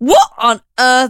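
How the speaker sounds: re-enacted shout. Speaker retells trying to return an impulse buy at Big Tesco; retelling a loud yell. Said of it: "I actually yelled".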